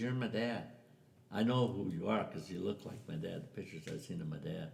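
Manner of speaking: ordinary talk, nothing marked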